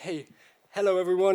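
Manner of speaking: upbeat, all-in vlogger presenter voice. Retelling pretending to film a travel vlog at a train museum, in YouTuber voice. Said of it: "my YouTuber voice".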